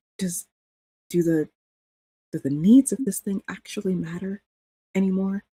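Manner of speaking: hushed, whispered speech. Player pulls Jolene aside to ask her something privately, in a whisper. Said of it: "say in a whisper".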